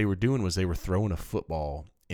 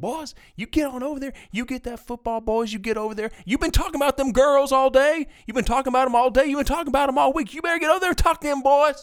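very high, very loud, shrill, booming country hollering; 8 dB louder than usual. Retelling how a man hollered at the boys, in his most country voice. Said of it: "starts hollering in the most country voice again".

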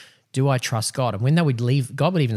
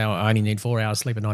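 normal talking voice

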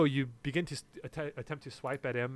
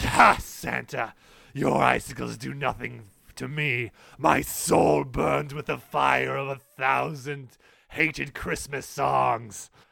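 loud, mocking, taunting laughing through the words; 6 dB louder than usual. Game master voices Krampus answering Santa's icicle attack: Krampus laughing at Santa. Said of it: "And he laughs at you at this point".

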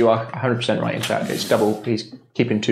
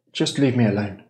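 put-on young man's voice. A game master voices an unseen figure answering the players, in a young man's voice. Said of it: "A young man's voice comes out".

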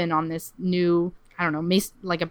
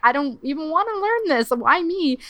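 put-on scream, higher; 9 semitones higher than usual. Retelling a story where a man asks why he was picked: imitating someone screaming. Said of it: "he starts screaming".

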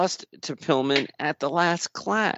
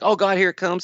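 imitated yelling, pitched higher; 4 semitones higher than usual. A commentator mimics how a wrestler yells before a move, imitating a wrestler's yell. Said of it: "He yells like".

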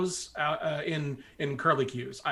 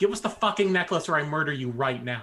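chilling, intimidating, menacing in-character voice; 3 dB louder than usual. Threatening a character in a tabletop game: menacing threat in character. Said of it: "I was trying to be chilling".

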